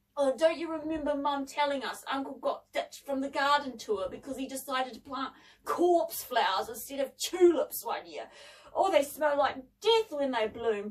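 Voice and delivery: plain reading voice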